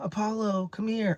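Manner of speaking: desperate, high, pleading yell. Recounting begging Apollo, who wouldn't come out of the bushes, retelling a pleading yell. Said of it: "I was yelling, screaming, begging, pleading".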